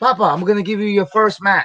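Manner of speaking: put-on cheerful, happy Puerto Rican accent. Retelling what Johnny said after pulling you into the office, imitating Johnny's very happy Puerto Rican accent. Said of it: "a very happy Puerto Rican accent".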